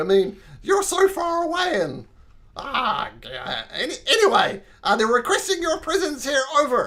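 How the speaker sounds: shouting. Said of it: "I'm sorry I'm shouting".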